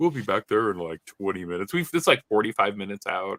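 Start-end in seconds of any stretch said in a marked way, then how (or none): 0.0-1.7 mock pilot announcement voice. Retelling the captain's announcement after the engine trouble: Chuck Yeager voice. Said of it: "the captain in that Chuck Yeager voice is like".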